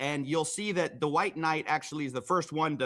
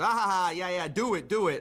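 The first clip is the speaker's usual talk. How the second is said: scoffing, mocking chuckle with a taunting tone; 3 semitones higher than usual. Retelling how a man in the video replied: imitating someone laughing and taunting. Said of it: "The other guy laughs and goes".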